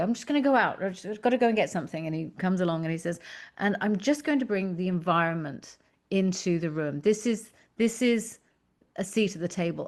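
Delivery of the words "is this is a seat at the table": ordinary talk, nothing marked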